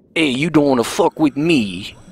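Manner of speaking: bad New Jersey accent. Joking, talking like a mafia fish in a terrible New Jersey-Italian accent. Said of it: "That was my terrible New Jersey slash Italian accent".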